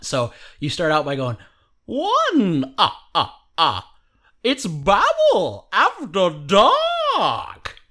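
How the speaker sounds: put-on vampire count accent. Explaining how to start out, the speaker demos a Count from Sesame Street voice. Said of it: "channel like the count from Sesame Street".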